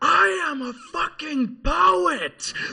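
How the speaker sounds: shrill, very loud, high-pitched screaming. Telling of seeing Bill Hicks on his knees yelling at a woman; imitating Bill Hicks screaming. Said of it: "screaming at a woman".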